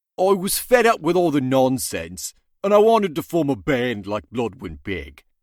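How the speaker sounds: put-on silly British accent, belted. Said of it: "can you please do it in um in a in a silly British accent".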